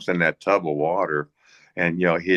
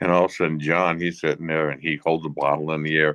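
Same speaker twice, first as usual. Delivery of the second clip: ordinary talk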